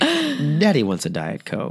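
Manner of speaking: creepy, lingering, drawn-out sing-song delivery. Retelling a friend ordering at a drive-thru: imitating a friend, creepy. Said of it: "it would creep everybody out".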